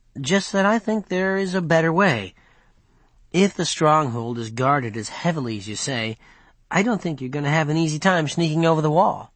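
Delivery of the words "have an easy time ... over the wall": plain reading voice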